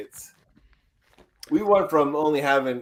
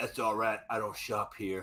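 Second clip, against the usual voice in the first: eighties action hero deadpan, low, soft, cool. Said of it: "those stupid puns they'd say".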